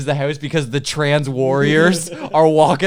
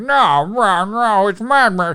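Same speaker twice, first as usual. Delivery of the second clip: put-on high, very slow fat guy voice; 5 semitones higher than usual. Retelling a moviegoer who won't move over one seat, imitating a fat guy voice. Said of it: "he has that fat guy voice".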